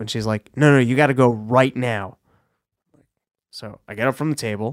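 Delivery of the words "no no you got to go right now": put-on intense, urgent, dead-serious insistent voice. Retelling how mom came to the table at a family dinner: imitating mom, real intense. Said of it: "real intense".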